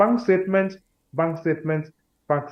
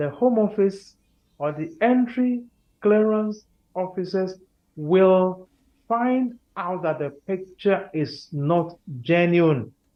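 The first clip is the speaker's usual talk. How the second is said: slow, carefully paced, deliberate delivery, every word placed; 2 semitones higher than usual. Speaker repeats a point so listeners catch it: slow and deliberate. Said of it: "let me say it again and say it slowly".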